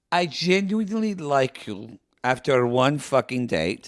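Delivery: ordinary talk, nothing marked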